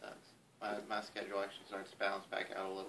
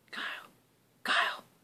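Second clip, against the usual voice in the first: acted-out whispered call. Retelling how two guys whispered a man's name to freak him out, imitating a whisper. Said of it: "he'd just whisper".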